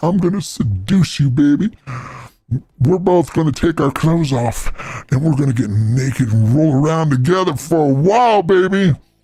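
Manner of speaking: normal talking voice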